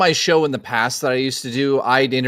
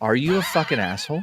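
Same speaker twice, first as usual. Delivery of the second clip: hushed, confiding stage whisper; 4 dB quieter than usual. Joking about what to do at a Comic-Con: mock half-whisper. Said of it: "go up to William Shatner and whisper to him".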